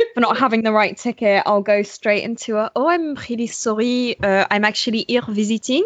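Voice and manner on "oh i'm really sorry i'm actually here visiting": put-on, fake French accent. Pretending to be visiting when caught without a train ticket: put-on French accent. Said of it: "I do like a French accent".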